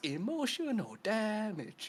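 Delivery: put-on very high-pitched delivery, Cantonese accent. Explaining speaking English in a Cantonese accent: Steven He impression. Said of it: "Stephen that goes".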